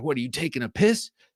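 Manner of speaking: mock-angry, put-on voice. Retelling how a taxi driver in england got mad at being called sir, imitating an angry cab driver. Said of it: "and he got mad".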